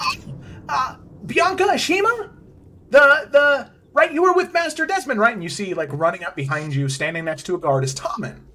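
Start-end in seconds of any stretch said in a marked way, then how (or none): 0.0-5.3 chipper, bright, very high, raised voice. A game master voices a character calling out to the players' characters, in a chipper Tommen voice. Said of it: "you hear a chipper voice".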